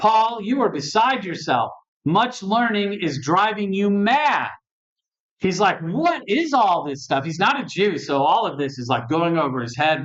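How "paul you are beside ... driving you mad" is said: high, emphatic, exclaiming outburst. Retelling a governor's reply to a long defense, in a very loud voice. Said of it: "he says with a very loud voice".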